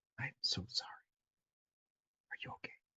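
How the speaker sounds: soft, low, hushed whisper. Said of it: "you whisper".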